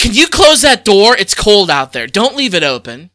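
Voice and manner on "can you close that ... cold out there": put-on very loud, blunt, rude, acted old-lady voice. Retelling how an old lady by the door asked for it closed, imitating a rude request. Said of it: "She said it real rude".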